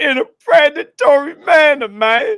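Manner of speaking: very high-pitched, loud, shrill, squeaky outburst. Reading a quoted tweet aloud: Gigi impression. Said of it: "I'm do my best Gigi impression".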